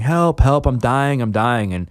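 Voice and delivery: mock high, stretched-out, held-back mild yell. Retelling walking into an emergency room, imitating screaming.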